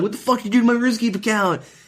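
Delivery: very high, frantic, losing-it outburst. Retelling finding the runescape account emptied: retelling a freak-out. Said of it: "I freak out".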